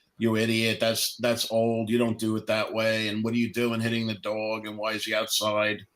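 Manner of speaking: normal talking voice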